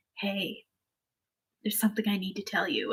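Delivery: hushed, quiet whisper. Retelling a plot where a character whispers a secret: retelling a whisper. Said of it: "whispers to his best friend".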